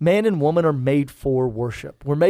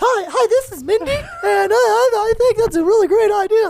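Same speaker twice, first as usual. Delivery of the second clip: put-on cartoon kid voice, much higher, louder; 4 dB louder than usual. Playing a pretend caller on a mock call-in show, in a Butters-like cartoon kid voice. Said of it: "That sounds like Butters from South Park".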